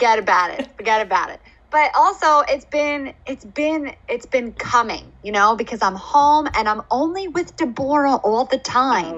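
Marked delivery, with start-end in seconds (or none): 0.0-1.4 full-on New Jersey Italian accent, not held back. Echoing a catchphrase after being told about the accent: new jersey italian accent. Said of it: "you've let the New Jersey Italian accent fly".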